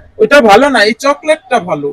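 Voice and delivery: deep father voice.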